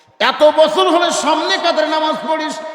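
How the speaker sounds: loud, high-pitched scolding outburst.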